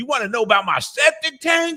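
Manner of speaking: very high, drawn-out yelling country man voice. Retelling a call where a country guy yelled: imitating a man yelling. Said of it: "one guy yelled at me".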